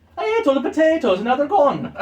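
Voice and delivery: high, loud Irish leprechaun voice, Irish brogue.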